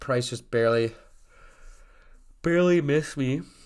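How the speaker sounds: speech through a yawn mid-sentence. Telling viewers about an order that did not fill, yawning. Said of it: "Sorry for yawning".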